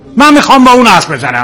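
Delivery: high-pitched, angry shouting.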